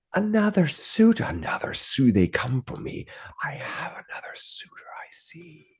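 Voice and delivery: breathy, hushed, whispered spirit voice. Game master voices an unseen voice the players hear, disembodied voice. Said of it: "you hear a voice and says".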